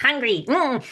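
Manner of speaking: silly, tiny goblin or gremlin creature voice. Retelling what the parasitic entity said, in a silly gremlin voice. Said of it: "just like that".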